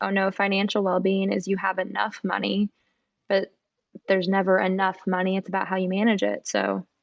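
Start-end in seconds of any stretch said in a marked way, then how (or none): none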